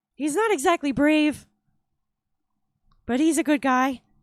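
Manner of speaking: breathy, nervous voice. Showing how a character he is describing talks: breathy, nervous-sounding voice. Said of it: "he kind of talks like this, where it's really breathy and kind of uh, nervous sounding".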